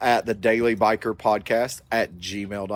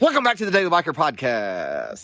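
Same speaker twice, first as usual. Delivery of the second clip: eager, pumped-up, high, swooping enthusiastic voice; 5 semitones higher than usual. Podcast host redoing the show's opening after a flat first try; more enthusiastic retake. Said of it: "do it again".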